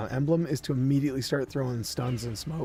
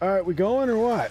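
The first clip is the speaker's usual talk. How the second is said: accent of Windsor; 7 semitones higher, 5 dB louder than usual. Commenting while playing a game: Windsor, Ontario accent. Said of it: "I don't know why I sound like I'm from Windsor".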